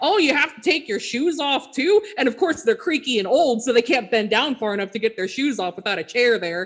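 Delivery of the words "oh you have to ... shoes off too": spot-on put-on Midwestern accent. Retelling people in line while a flight boards, in a put-on Midwestern accent. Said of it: "You got that accent perfectly".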